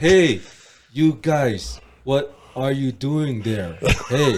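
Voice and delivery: loud, very slow, drawn-out, wooden bad acting. Mocking an actor's awful acting in the first Fast and Furious: Paul Walker bad acting impression. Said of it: "grade one acting school or what?".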